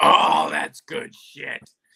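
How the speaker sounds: big, booming, relishing approval, slow, loud, drawn out. Retelling a wrestling pitch meeting, imitating Vince McMahon. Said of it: "You sound just like him".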